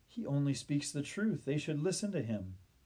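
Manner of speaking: ordinary delivery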